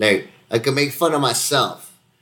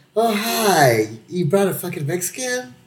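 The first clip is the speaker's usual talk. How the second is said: slow, pitched-up, forced, fake-polite tone; 8 semitones higher than usual. Retelling how the old golfers greeted a newcomer: imitating a forced polite greeting. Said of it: "that tight smile".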